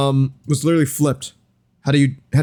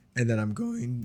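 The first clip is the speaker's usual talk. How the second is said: very quiet, barely audible, breaking voice; 3 semitones lower, 12 dB quieter than usual. Explaining a modeling tool in a tutorial when the voice cracks. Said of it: "Voice crack".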